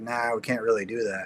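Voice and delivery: put-on bored tone. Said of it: "this kind of bored guy answers the phone".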